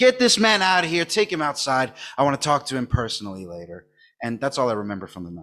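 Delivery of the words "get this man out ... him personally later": usual speaking voice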